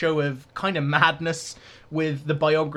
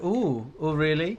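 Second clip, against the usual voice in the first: put-on affronted, offended little "ooh". Acting out an android cocking its head after being insulted: mock offended tone. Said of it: "it's like an imitation of being offended".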